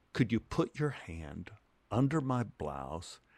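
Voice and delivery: low, hushed, quiet, confiding stage whisper. Retelling what a co-star said during a scene: imitating a half-whisper. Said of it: "she whispers to me".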